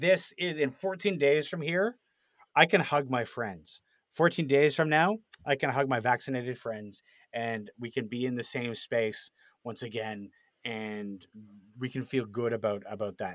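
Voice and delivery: ordinary talk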